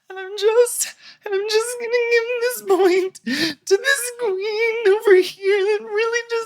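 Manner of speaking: quavering, quaking voice, pitched very high. Retelling how Acid Betty gave her point: quaking high voice imitating Acid Betty. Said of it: "in a quaking, uh, high voice".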